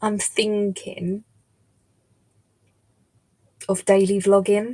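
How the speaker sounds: drawn-out, word-by-word, very slow deliberate delivery. Telling viewers about a tentative plan, speaking very slowly. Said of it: "I'm saying this very slowly".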